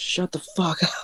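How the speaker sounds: high whispered mock yell, hissed and muffled.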